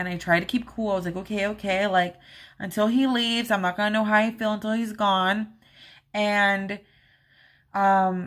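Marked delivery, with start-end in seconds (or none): none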